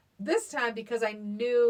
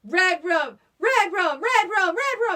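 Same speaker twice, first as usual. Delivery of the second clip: put-on shrill, very high, drawn-out child's yell; 9 semitones higher, 8 dB louder than usual. Retelling a movie scene where the kid wakes up: imitating a kid yelling. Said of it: "he's a kid when he's yelling it".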